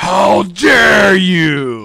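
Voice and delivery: very loud, high, huge, booming dragon roar. Game master voicing a dragon that wakes the sleepers, in a roaring voice. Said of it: "rudely awakened from your slumber by this roaring voice".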